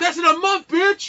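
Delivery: very high, shrieking scream. Imagining being in the crowd at e3, mock-screaming from the crowd. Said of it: "I would have screamed like".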